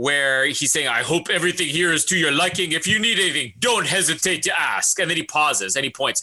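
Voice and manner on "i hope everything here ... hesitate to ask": put-on Jamaican accent. Retelling a scene where she meets Timothy Dalton, the speaker voices him: Jamaican accent. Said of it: "I didn't know Timothy Dalton was Jamaican".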